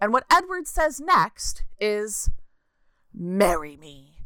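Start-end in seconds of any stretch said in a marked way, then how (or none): 3.1-4.2 put-on threatening tone, much lower pitched. Recapping a movie's ending, acting out what Edward says next, mock-threatening. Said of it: "In the most threatening tone possible".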